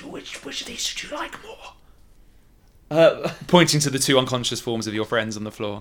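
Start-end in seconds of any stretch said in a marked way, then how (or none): 0.0-3.3 slow, hushed, secretive whisper. Game master voicing a character's line to the players, whispering. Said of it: "And he whispers".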